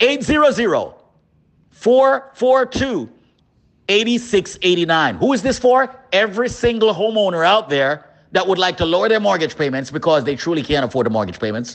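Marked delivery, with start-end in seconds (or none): 0.0-5.1 very slow, deliberate, each digit drawn out. Speaker in a mortgage ad giving the number to call, saying it slowly. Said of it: "Let me say the number slowly".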